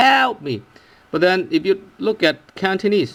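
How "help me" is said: stress on help with a raised tone. Explaining english stress versus cantonese tone, stress help with raised pitch. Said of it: "you stress the word help and by raising the tone or raising the pitch".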